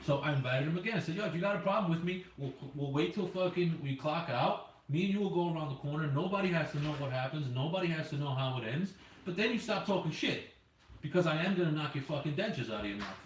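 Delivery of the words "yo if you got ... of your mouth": ordinary delivery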